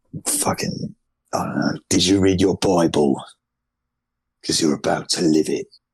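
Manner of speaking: put-on British accent, tough-guy voice. Imagining how a British character would sound: Jason Statham voice. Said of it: "having like a Jason Statham voice".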